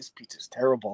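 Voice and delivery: hushed, muttered whisper under the breath. Retelling a remark made about pizza at a counter: retelling a whisper. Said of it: "I whispered to a guy".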